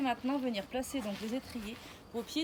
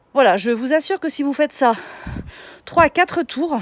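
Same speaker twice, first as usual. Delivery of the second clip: winded, out of breath and very loud; 18 dB louder than usual. Leading an exercise session for viewers, speaking out of breath. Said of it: "vous avez vu comme je suis essoufflée".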